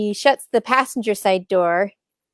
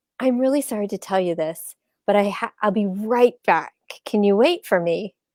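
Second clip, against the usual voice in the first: usual speaking voice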